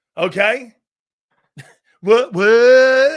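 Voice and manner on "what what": very loud mocking voice, drawn-out "what"s. A speaker talking about a j brown breaks into a mocking liberal voice. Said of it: "every time I talk like like a lib".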